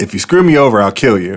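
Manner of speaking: put-on casual, offhand, matter-of-fact, nonchalant delivery. Retelling a threat made to a stranger in the truck: imitating a nonchalant tone. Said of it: "very nonchalantly".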